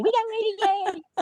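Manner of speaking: very high, very slow, drawn-out scream. Voicing a whole row of guinea pigs getting lady hay: imitating guinea pigs screaming. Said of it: "the whole row will start screaming".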